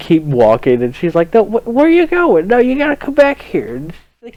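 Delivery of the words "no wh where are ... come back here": put-on very high old librarian lady voice. Retelling how an old librarian stopped someone sneaking candy: imitating an old librarian lady. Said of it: "it's this old librarian fuck, and she's just like".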